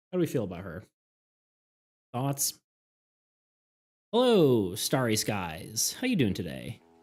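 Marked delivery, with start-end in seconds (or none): 4.1-6.7 slight radio-announcer tone, slower. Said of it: "like a radio announcer".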